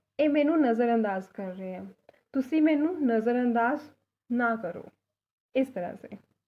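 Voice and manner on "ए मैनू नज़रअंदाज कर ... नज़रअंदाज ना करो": plain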